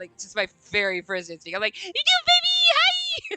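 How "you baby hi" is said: put-on overjoyed, giddy tone. Retelling greeting a child at work: retelling own overjoyed greeting. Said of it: "stupid happy".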